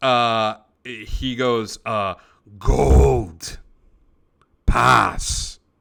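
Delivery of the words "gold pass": rough, gravelly voice, getting louder. Voicing a character who answers the players' question about a card, in a gravelly voice. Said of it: "just a gravelly voice".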